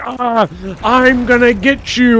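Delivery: acted-out very slow, drawn-out, dragged-out long scream. Retelling an NPC heard on the ground: imitating an NPC screaming. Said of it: "on the ground screaming".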